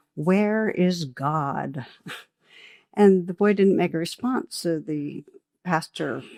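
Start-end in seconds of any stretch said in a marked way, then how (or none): 0.2-1.9 mock strict, very stern and severe. Telling a story, the speaker voices a clergyman questioning a boy; retelling a stern question. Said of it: "he asked him very sternly".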